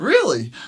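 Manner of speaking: loud, openly incredulous, one word. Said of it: "it was so, like, incredulous".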